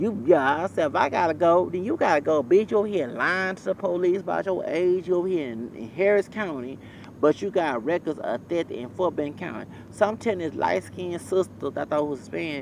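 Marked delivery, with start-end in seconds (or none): none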